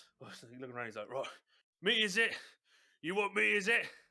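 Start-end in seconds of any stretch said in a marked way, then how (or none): 1.1-3.9 very loud, high, erupting raging outburst. Voicing a character going into his rage, eyeing everyone: Major Pistachio in a rage. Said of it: "when he goes into his rage".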